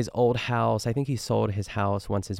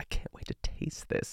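soft, hushed whispered aside. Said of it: "She's like".

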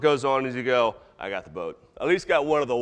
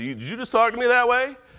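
scolding mom voice, pitched way up high; 9 semitones higher than usual. A speaker acting out God answering someone who yells at him, God in a put-on mom tone. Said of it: "the mom tone comes into that".

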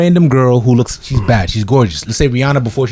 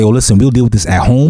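ordinary talk, nothing marked

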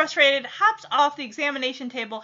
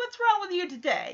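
put-on condescending tone, quieter; 5 semitones higher, 5 dB quieter than usual. Retelling what a receptionist asked Veda, mock-condescending receptionist tone. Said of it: "that condescending tone".

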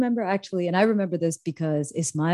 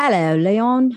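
put-on British accent, raised voice; 6 semitones higher, 6 dB louder than usual. A podcast host greets co-host leon in the intro, in a fake british accent. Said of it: "What the hell was that? ... What accent was that?".

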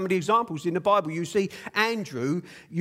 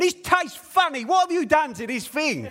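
play-acted, high-pitched, loud shouting in a put-on voice; 8 semitones higher, 3 dB louder than usual. Retelling how a horrible boss reacted to her coffee: imitating boss shouting. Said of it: "she starts shouting at him".

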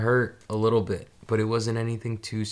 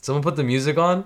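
fairly loud, louder; 5 semitones higher, 5 dB louder than usual. Retelling own knee-jerk remark while someone was screaming, said kind of loud. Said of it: "I said it kind of loud".

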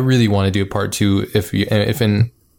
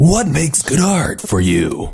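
swooping movie trailer announcer voice; 6 semitones higher than usual. Podcast speaker putting a question to the others: movie trailer voice. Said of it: "All my questions will be in the form of movie voice".

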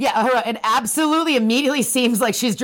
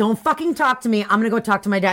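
ordinary delivery

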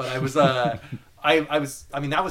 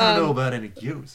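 put-on country cowboy accent; 3 dB louder than usual. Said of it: "we're all dropping our regular podcast accent".

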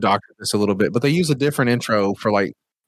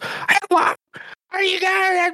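high-pitched, stretched put-on voice. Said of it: "the fucking bird is basically like [name]".

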